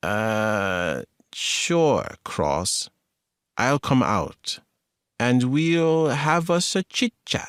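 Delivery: slow, strange, weird dragging voice, drawn-out "uh". Narrator reads Lay answering Cross on the phone in a slow, weird voice. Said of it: "in a slow, weird voice".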